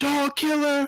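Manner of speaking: shrill, very high-pitched scream. Retelling how a woman in the elevator screamed at him: imitating someone screaming. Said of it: "screamed at me".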